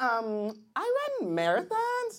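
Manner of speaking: put-on high drawn-out girly voice.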